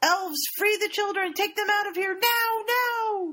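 very high-pitched, shrill shouted yell. Retelling the game scene, a disguised character orders the elves, retelling a yell. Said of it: "And he yells".

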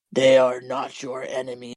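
very low, deep, dark demon voice. Recounting a scene where a man reveals himself as a demon: deep demon voice. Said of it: "deep voice".

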